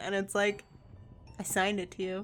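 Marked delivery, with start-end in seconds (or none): none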